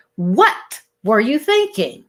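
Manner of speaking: stress landing on first word "what". Saying one question different ways, stress on first word "what". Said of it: "with the emphasis on the first word".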